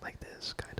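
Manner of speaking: close, quiet whisper. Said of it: "close whispers, like".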